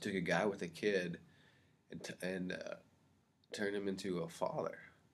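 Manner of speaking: choked-up voice, catching, emotional break. Telling another speaker how working the steps changed him: choked up. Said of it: "I get choked up saying this".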